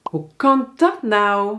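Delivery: genuine, astonished, surprised amazement. Teaching Dutch particles in questions, giving an example: surprised. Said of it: "als je verbaasd bent".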